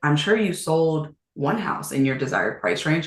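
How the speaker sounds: plain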